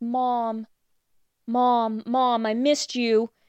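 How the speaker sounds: acted-out crying. Retelling a scene where a girl wakes and sees her mom, imitating crying. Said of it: "starts crying".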